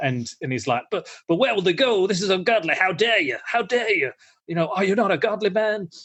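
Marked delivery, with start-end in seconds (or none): 0.9-5.9 sanctimonious, self-righteous, high preacher voice. Retelling a film scene, quoting the preacher: imitating a self-righteous preacher. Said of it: "this self-righteous preacher".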